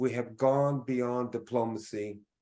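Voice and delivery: normal talking voice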